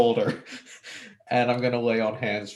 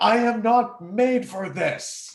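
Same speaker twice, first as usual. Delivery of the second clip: high, booming, powerful bellow; 12 semitones higher, 4 dB louder than usual. A player's character running toward the lights, calling back to the group, Centaurian bellow. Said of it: "this Centaurian bellow of".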